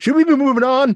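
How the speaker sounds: very loud, high, overshot blurted shout. A game master voices a character who shouts louder than intended. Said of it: "he shouts it a little louder than he intended".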